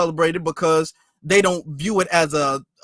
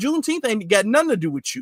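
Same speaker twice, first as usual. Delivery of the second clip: plain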